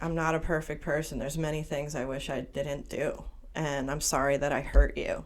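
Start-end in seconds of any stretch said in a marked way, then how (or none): none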